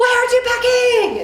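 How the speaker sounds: hard, high-pitched screaming and yelling. A mother retells screaming at her daughter, in a reenacted scream. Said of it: "I screamed at my daughter".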